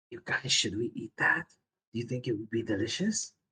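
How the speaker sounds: soft, hushed, secretive whisper. Player voicing a character looking back at the group, whispering behind his hand. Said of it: "sort of whispers with his hand up to his mouth".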